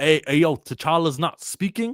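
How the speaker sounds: high, casual voice. Describing notes on a sequence, the speaker mimics Ryan Coogler: Ryan Coogler voice. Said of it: "That's my Ryan Coogler voice".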